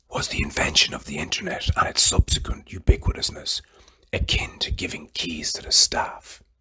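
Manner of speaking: low, soft whisper.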